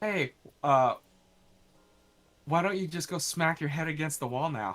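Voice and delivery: put-on taunting tone cracked through laughter, teasing. Retelling how dad, laughing, taunted the hurt brother: imitating dad laughing while talking. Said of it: "he was busting up laughing".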